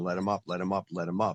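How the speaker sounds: normal talking voice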